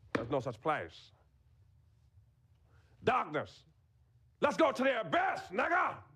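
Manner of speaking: lively, high delivery with wide, upward pitch swings. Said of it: "his response is like this".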